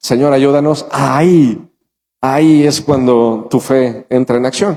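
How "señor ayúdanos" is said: ordinary delivery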